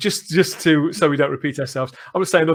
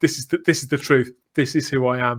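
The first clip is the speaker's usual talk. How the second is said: put-on deadpan delivery. Quoting a favourite scene's line: imitating a deadpan delivery. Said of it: "he plays it so totally deadpan".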